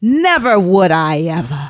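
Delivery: very slow, withering, snarling 1930s film voice. Showing how to add more snarl, snarling withering 1930s film voice. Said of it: "a little more snarf to it".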